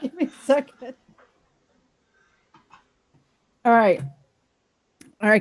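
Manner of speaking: holding back laughter. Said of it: "I'm choking because I'm trying not to laugh".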